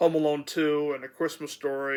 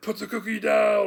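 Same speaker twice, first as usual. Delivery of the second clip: raised, rough, loud, pitched-up voice; 7 semitones higher, 5 dB louder than usual. Describing a movie scene on the phone: Arnold Schwarzenegger impression. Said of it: "that's how he talks, sorta like that".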